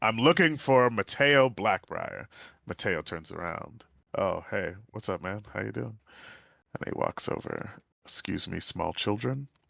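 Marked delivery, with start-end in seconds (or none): 0.0-2.3 loud high-pitched shout carrying across a room. A player's character walks in looking for someone, Elias shouting. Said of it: "Elias walks in and he shouts".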